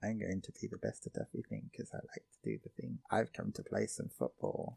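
barely audible, very quiet whispered murmur. Describing how Ken talks to everyone: imitating Ken's quiet voice. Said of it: "You're speaking so quietly".

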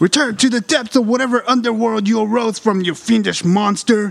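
shouted battle cry. In a game scene, a character shouts at a fiendish monster, shouting.

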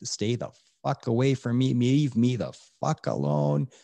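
furious, all-out scream at top volume. Recounting screaming back at someone while driving on a freeway, retelling a furious scream. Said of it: "screaming back at him at the top of my lungs".

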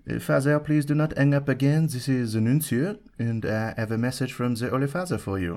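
ridiculous, over-the-top, put-on French accent. A priest retells the nuncio's phone call to him, ridiculous French accent. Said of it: "that's a ridiculous French accent".

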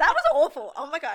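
high, loud speech through laughter. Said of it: "I shouldn't laugh".

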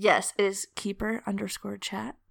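seductive, alluring tone. Giving the podcast's Instagram name at the end of an episode, in a seductive voice. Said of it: "say it a little less seductive".

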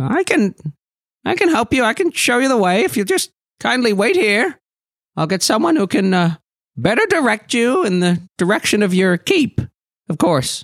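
puffed-up put-on character voice, pitched high. Voicing the Aarakocra offering to show the way: Aarakocra voice. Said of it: "the Aarakocra kind of puffs up a little bit and says".

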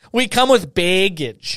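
baggage said with a Wisconsin accent. Repeating a phrase the way it's said in Wisconsin, Wisconsin accent. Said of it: "That's how we say it in Wisconsin".

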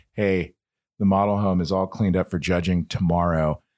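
usual speaking voice

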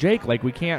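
plain

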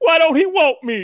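mock sobbing, very high and loud, tearful. Retelling a TV scene where a son asks why his father left: imitating someone crying.

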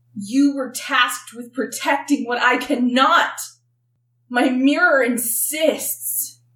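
voice quivering, shaking and trembling throughout. A storyteller voices a winged seer as she stands and speaks; shaking voice. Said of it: "her voice is shaking".

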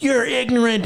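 mock furious, high-pitched, super-mad. Retelling how Hannah reacted when the speaker provoked her: mock-angry as Hannah. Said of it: "Hannah got super mad at me".

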